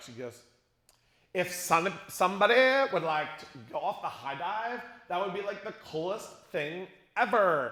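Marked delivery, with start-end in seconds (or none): 1.3-7.7 put-on voice of a 90s girl. Telling a story, the speaker mimics a girl overheard a few seats up: imitating a 90s girl. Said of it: "here's what she sounded like".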